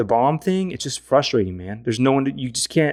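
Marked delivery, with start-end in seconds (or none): none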